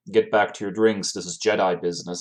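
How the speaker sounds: plain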